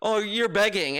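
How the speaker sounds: ordinary talk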